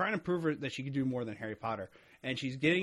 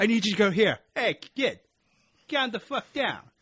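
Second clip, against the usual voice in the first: very loud, heavy put-on Brooklyn accent; 9 semitones higher, 9 dB louder than usual. Pitching someone who drops into the car, in a thick brooklyn accent. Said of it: "someone with a thick Brooklyn accent".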